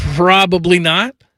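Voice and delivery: slow, hesitant, drawn out and unsure.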